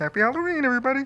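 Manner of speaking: put-on frog puppet character voice. Doing a requested Muppet impression, greeting everybody: Kermit the Frog voice. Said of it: "Go back to your Kermie".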